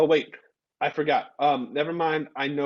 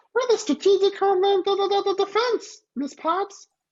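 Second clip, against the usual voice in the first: put-on puppet voice, much higher; 3 dB louder than usual. Speaker imagines Elmo saying an Iron Man line: terrible Elmo impression. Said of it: "Sorry for my terrible Elmo impression".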